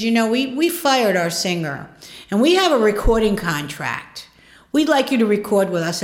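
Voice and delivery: ordinary talk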